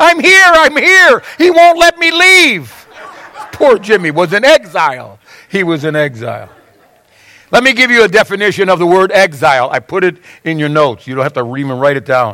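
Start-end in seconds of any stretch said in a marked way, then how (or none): 0.0-2.9 very high, long, drawn-out desperate cry. Telling a joke, the speaker voices the son calling from upstairs, retelling Jimmy's desperate cry. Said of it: "a desperate voice from upstairs said".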